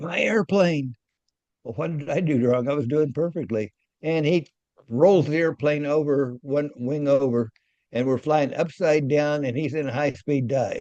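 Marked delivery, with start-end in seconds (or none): 0.0-0.9 put-on scream, cried out high and sudden. Retelling how he suddenly took the airplane's controls: imitating someone screaming. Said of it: "he screams at me and says".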